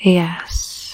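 seductive, sultry, velvet-voiced whisper.

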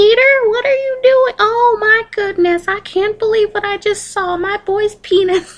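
put-on little mousy old-woman voice, very high. A mom opens the door on her son peter: tiny mousy old lady voice. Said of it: "This like old lady voice".

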